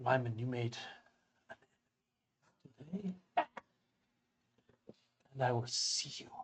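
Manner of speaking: soft, quiet, hushed voice. Telling listeners they may choose to hear it or not, said kind of quietly. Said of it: "and I will say kind of quietly".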